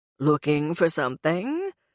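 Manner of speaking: haughty, superior, snooty cat voice with swooping tone. Reading a story, the narrator voices the cat Brimstone speaking to Gray, snooty cat tone. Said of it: "in his usual snooty cat tone".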